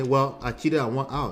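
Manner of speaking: ordinary talk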